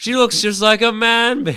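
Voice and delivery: high-pitched loud screaming. Repeating the movie line louder: screamed Austin Powers voice. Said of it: "of you screaming".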